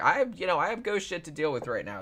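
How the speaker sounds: put-on pissed-off outburst. Retelling how a woman reacted when interrupted: imitating someone pissed off. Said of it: "gets all pissed off".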